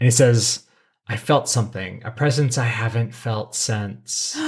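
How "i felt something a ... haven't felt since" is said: normal talking voice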